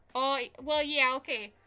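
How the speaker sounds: Wisconsin-sounding accent. Answering another speaker about Southern words, Wisconsin-sounding accent. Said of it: "Now that sounded Wisconsin".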